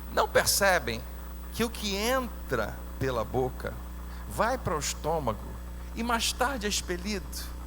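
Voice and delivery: slow, deliberate, drawn-out, long pauses between phrases.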